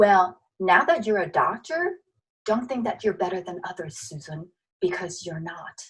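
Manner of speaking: soft, gentle, hushed fatherly voice. Retelling what the father said after graduation: imitating a gentle half-whisper. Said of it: "whispered in my ears in a very gentle tone".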